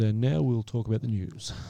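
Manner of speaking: put-on very deep, old-school news anchor reading voice. Imitating an old newsreader opening the news: deep Walter Cronkite voice. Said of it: "He talks in a very deep voice and says".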